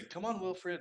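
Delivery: very high, sugary sweet coaxing voice. Role-playing calling a dog named wilfred to come, in a sweet voice. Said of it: "like in like a, a sweet voice".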